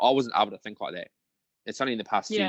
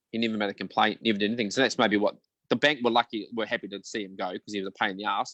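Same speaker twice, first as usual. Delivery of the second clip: ordinary talk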